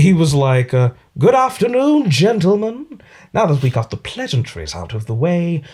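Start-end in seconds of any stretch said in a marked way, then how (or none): 1.2-5.6 put-on swooping, animated, strongly British accent. Show how you copied the British actor's performance while adding some of your own, as a Gary Oldman impression. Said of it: "Gary Oldman is a very British actor. So to to copy his performance".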